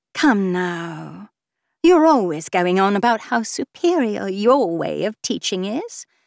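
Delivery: smug, alluring, self-satisfied, seductive, drawn-out voice. Babs, unmoved by Basil's reaction, keeps pressing him: smug and alluring. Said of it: "Babs sounded both smug and alluring".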